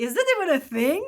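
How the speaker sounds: incredulous, scoffing, high and loud in disbelief.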